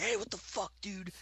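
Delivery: mock aggressive barked outburst, very high-pitched. Retelling the moment they yelled at a man ashing on them, retelling barking at someone. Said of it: "I was barking".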